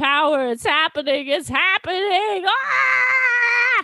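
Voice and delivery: acted ecstatic cartoon-villain yell, high, swooping, ah stretched. Retelling a scene with Babidi, imitating Babidi yelling. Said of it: "He starts yelling".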